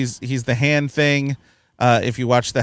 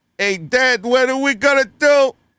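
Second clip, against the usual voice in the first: very high-pitched celebrity-style star voice; 11 semitones higher than usual. Retelling how an actor did the impression when asked: Christopher Walken impression. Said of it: "can you do a Christopher Walken impression?".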